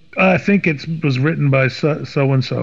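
plain

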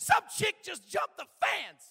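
sudden, very high, very loud shrill yell. Retelling a sudden shout from the kitchen: imitating someone yelling. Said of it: "Matisse yells out".

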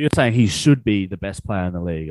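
normal talking voice

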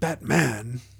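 stress on second syllable "man" in the word. Retelling a quote about biting a bat's head off: stress on man in Batman. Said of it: "It's the emphasis on... The second syllable? Yeah".

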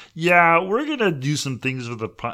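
high, loud, dopey, dim-sounding voice. Joking around with a co-host, doing a John C. Reilly impression. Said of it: "that's my John C. Reilly".

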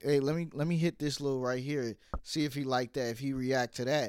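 ordinary talk

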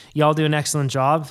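ordinary talk

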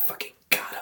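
hushed, breathy whisper under the breath. Acting out a prankster after someone sniffs the candle: imitating someone whispering. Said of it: "you just whisper".

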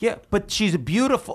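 play-acted high-pitched yell. Retelling a moment of catching oneself on the way in: retelling yelling at oneself. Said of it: "I start yelling at myself. I go".

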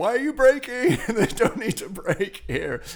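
startled, sudden exclamation.

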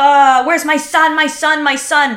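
put-on screaming and crying. Retelling how a woman kicked and called for her son, mock screaming and crying. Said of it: "She's kicking and screaming and being like".

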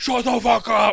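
acted very high, very loud, shrill, furious outburst. Retelling how a classmate reacted to teasing while smashing the table: imitating an angry outburst. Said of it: "he would smash the table like a, like a gorilla".

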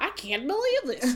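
put-on Staten Island accent. Retelling what a judge said: imitating a Staten Island woman. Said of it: "she sounded like a Staten Island woman".

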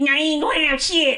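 put-on very high old grandma voice. Retelling asking grandma for a biscuit at her door, imitating grandma's voice. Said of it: "I got her voice down so good".

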